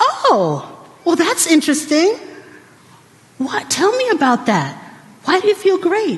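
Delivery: forced calm, feelings pushed down, swooping sing-song. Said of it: "push it down, push it down".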